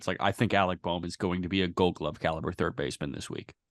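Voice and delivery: dry, low, sarcastic deadpan. Speaker demonstrates their usual joking style: deadpan sarcasm. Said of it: "try and deadpan sarcasm".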